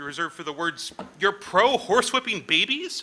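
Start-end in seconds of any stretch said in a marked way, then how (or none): 1.2-3.0 put-on horrified tone, higher and louder. Showing the tone saved for horrible accusations: mock appalled tone. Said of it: "In this tone of voice that's usually re-".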